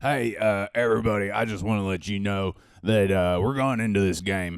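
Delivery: loud, put-on Southern American accent. Imitating a guy who speaks with a Southern accent. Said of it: "he speaks with a southern accent. He's like".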